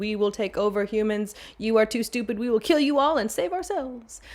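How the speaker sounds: ordinary delivery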